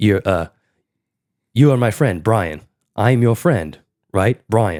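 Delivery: robotic speech-synthesizer voice. Repeating a movie robot's line: Stephen Hawking type voice. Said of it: "a Stephen Hawking type voice".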